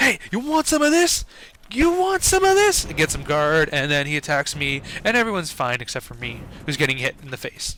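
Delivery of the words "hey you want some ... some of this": very high, shrill, rising, taunting yell. Describing their game character's role, retelling a yelled taunt. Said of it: "I'm yelling, like".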